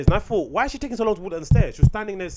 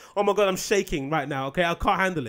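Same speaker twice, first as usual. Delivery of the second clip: normal talking voice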